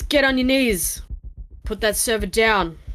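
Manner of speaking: commanding, authoritative agent voice. Voicing an agent pointing a gun at the player: agent voice. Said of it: "He goes".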